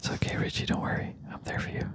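hushed whisper. Reassuring Richie after a segue: whispering. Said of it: "don't whisper".

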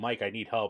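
ordinary delivery

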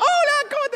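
imitated put-on laughter. Imitating a mother greeting visitors with a fake laugh: imitating mom's fake laugh. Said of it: "Mi mamá se reía así".

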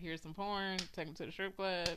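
normal talking voice

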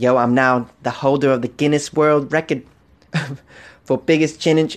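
voice dropped low, plain reading tone. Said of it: "my [name] impression".

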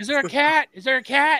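loud yell. Retelling how a friend yelled up the driveway: imitating someone yelling. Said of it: "he's like yelling to you".

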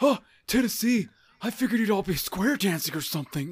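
loud, high, blaring, goofy, oblivious voice. Imitating a wrestler talking down to a crowd: goofy oblivious Kurt Angle voice. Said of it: "he just sounded like, kinda, goofy".

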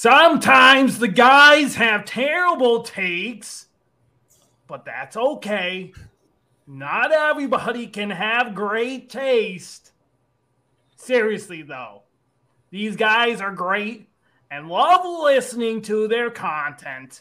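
loud goblin character voice. Reading a listener's review aloud in a funny voice: Bleck the Lesser goblin voice. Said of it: "my goblin character named Bleck the Lesser".

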